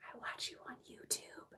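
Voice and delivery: very soft, hushed, confiding whisper. Retelling what a cashier said on recognizing her: imitating a whisper. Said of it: "she whispered to me".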